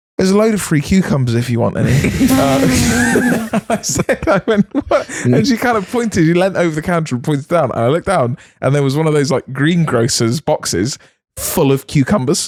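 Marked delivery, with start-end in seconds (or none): none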